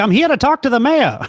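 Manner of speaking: put-on loud, very high, old-fashioned newsman voice. Imagining impersonating someone, the speaker slips into an old-timey newsman voice. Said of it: "be like an old timey news guy".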